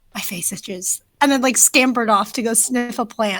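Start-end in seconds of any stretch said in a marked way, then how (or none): 0.2-1.1 soft, hushed whisper, leaned in close. Retelling what the other speaker said while leaning in close: imitating a whisper. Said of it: "essentially whispered it to me".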